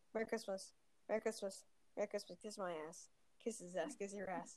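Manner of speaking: very soft, rushed, quiet rapid-fire rattle. Telling a funny story about a guy at work, said really quickly. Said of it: "I'm going to say it really quickly".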